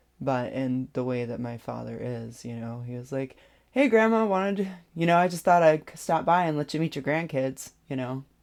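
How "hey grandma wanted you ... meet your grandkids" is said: high, loud sarcastic tone. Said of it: "that's his sarcastic ... voice".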